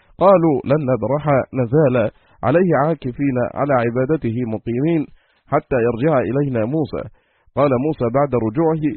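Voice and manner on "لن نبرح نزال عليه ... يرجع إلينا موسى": usual speaking voice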